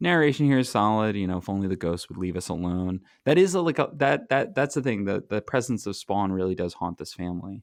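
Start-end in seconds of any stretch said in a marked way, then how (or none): none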